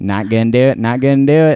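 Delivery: mock nasal, old-fashioned tone. Comparing Leo's Howard Hughes voice to a famous sketch; George Bush Sr. impression. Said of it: "Leo's vocal impression of Howard Hughes sounds like Dana Carvey doing George Bush Sr".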